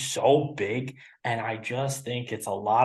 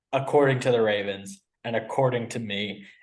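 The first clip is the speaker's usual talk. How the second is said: plain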